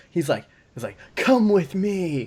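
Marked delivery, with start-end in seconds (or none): 1.2-2.3 high, over-eager, over-exuberant, pumped-up calling voice. Retelling how a presenter invited everyone along: imitating over-exuberant Alex Hunter. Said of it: "he's like the over-exuberant guy at, like, a Disneyland".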